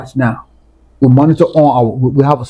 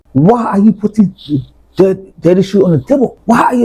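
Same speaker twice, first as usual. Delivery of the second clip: put-on, furious, angry screaming; 6 semitones higher than usual. Recounting a fight with his child, the speaker acts out what he yelled: retelling an angry scream. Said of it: "I screamed at him".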